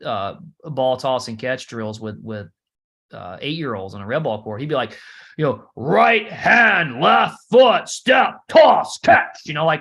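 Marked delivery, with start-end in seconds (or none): 5.8-9.4 very loud, very slow, deliberate military drill-style delivery. Retelling a coach's ball toss drills with young kids: imitating a military-sounding coach. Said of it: "it almost sounded like the military".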